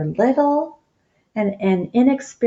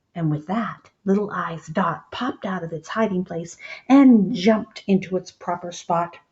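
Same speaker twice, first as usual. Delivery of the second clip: plain reading voice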